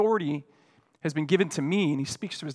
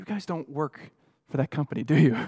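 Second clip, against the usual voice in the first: mock whispering, as an aside. Retelling what the person seated beside him at the table whispered: retelling a whisper. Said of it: "leaned over and whispered to me and said".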